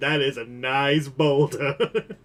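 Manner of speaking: put-on animated donkey voice. Comparing another speaker's line to a cartoon quote: Donkey voice. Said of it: "with the exact same cadence as Donkey going".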